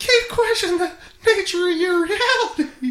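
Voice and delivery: high, loud, squeaked voice. Joking around with a line said to Dolores, the speaker uses a Mickey Mouse voice. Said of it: "Mickey Mouse?".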